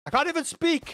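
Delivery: angry, high-pitched ranting delivery.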